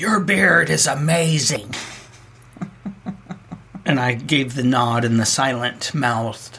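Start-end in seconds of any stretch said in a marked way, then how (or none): 0.0-1.7 put-on high, raspy old lady voice. Retelling a woman leaning out a window to compliment him, in a raspy old woman voice. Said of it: "said in a raspy old woman voice".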